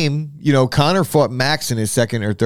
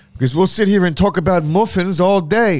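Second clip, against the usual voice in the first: terrible, pitched-up, put-on British accent; 6 semitones higher than usual. Moving on from a segment, the speaker talks in a terrible british accent. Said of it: "That was a terrible British accent".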